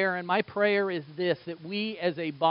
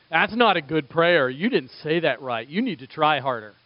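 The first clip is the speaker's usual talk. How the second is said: put-on, mock-accusing inner voice; 5 dB louder than usual. The speaker acts out an inner voice judging a prayer, acting out an accusing voice. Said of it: "That accusing voice goes".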